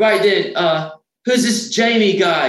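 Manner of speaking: deliberately bad, very high, slow drawl. Retelling a conference call where he asks about the one person he doesn't know, very bad Gary Smith impression. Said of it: "my very bad Gary Smith impressionation".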